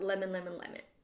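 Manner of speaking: rapid, low, soft repetitions rattled off. Leading an exercise, speaker shows the group how to say lemon fast. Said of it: "say it as fast as you can".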